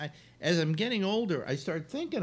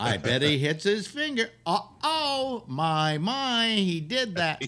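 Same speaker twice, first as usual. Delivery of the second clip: high-pitched, very slow, drawn-out narrator voice; 6 semitones higher than usual. Imitating a narrator describing someone hammering a nail: Pete Smith impression. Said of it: "he used to do these things called Pete Smith Specialties".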